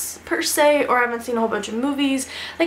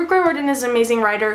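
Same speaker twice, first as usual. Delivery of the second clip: ordinary talk, nothing marked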